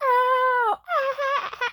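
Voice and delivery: very high, stretched, drawn-out fake wailing. Retelling how a little boy reacted to a light smack: imitating a boy's fake crying. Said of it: "he kind of fake cried".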